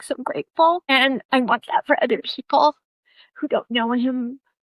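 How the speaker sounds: tearful voice. Speaker talking about gratitude to God and breaking into tears: crying. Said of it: "so that's like right now I'm crying".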